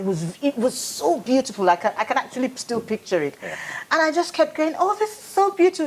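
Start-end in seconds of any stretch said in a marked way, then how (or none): 4.8-5.9 put-on seven-year-old child voice, much higher and faster. Recalling seeing sunlit water in the garden as a child, seven-year-old child voice. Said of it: "with my 7-year-old voice".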